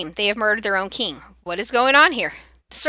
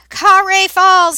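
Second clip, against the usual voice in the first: guttural goblin scream, much higher, louder; 8 semitones higher, 8 dB louder than usual. Goblin leader, hoisted up by the others, addresses the crowd; guttural goblin scream. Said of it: "he screams in his guttural voice".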